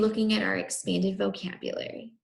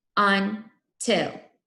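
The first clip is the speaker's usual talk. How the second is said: robotic voice, robot-style syllable-by-syllable speech; 4 dB louder than usual. Leading a class through syllables, saying the word in robot talk. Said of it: "Do until with me".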